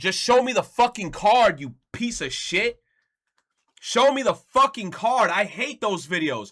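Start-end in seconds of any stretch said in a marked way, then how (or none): 0.0-5.3 angry yelling, pitched much higher. Ranting about videos that stall before showing the card, angry yelling. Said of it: "I'm yelling".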